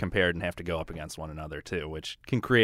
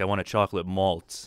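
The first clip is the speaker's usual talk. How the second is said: normal talking voice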